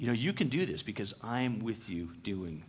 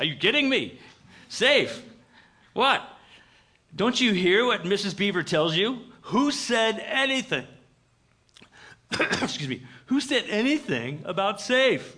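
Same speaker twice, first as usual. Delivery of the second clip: put-on raised New York accent; 10 semitones higher, 10 dB louder than usual. Voicing Mr. Beaver answering Lucy's question about Aslan: Mr. Beaver in a New York accent. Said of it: "if he was from New York, he'd say".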